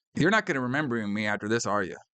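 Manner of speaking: ordinary talk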